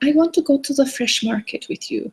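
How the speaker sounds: terrible put-on Dutch accent in little-girl voice. Retelling what the neighbors' eight-year-old said, in a terrible dutch accent. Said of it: "It's my terrible Dutch accent".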